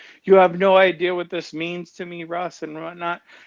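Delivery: high, weepy, bawling, tearful crying voice. Retelling what she said after he offered to do this; imitating someone crying. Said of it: "she just started bawling, crying".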